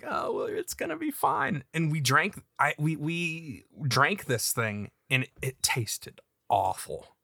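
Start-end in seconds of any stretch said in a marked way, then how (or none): 0.1-1.6 high, smirking, reassuring tone. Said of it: "she kinda smirked at me and was like".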